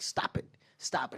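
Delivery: angry, mad whisper under the breath. Retelling own line from a shoot, imitating getting mad. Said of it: "I'm getting really mad at him".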